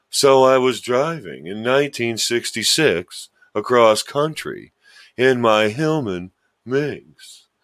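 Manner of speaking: slowed-down cartoon-style voice. Retelling a friend's road trip story, imitating Don like Snagglepuss. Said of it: "He talks like this, like, kind of like Snagglepuss".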